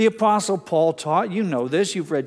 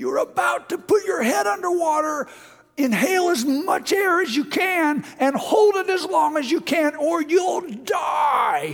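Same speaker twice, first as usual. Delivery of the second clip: high-pitched, panicked scream. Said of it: "is screaming".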